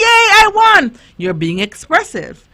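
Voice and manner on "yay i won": joyful, very high-pitched, loud happy cheer. Showing children how an expressive winner sounds: happy shout. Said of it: "smile big and shout".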